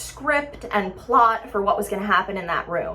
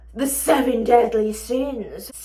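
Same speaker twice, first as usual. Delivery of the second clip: creepy, spooky, over-the-top theatrical voice, much slower; 6 semitones higher than usual. Hosting a haunted house, telling visitors tonight's theme, creepy over-the-top voice. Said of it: "I did it all in a creepy voice".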